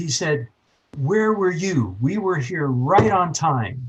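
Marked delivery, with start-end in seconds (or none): 1.0-3.9 angry outburst with raised pitch. Retelling how a doctor snapped about lateness: imitating a doctor blowing up. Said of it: "this doctor blew up at me".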